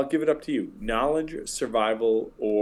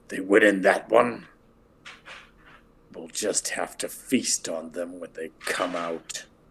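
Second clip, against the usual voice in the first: low-pitched wolf voice; 4 semitones lower than usual. Narrating a scene, the speaker voices a wolf talking to another voice: wolf voice. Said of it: "a wolf voice saying to another voice".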